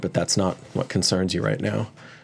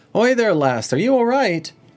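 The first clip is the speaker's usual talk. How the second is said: very high, loud woman's calling voice; 14 semitones higher, 6 dB louder than usual. Voicing a woman calling from the fishery to a running player: voicing a woman at the fishery. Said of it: "a woman's voice".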